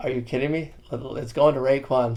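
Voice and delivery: ordinary talk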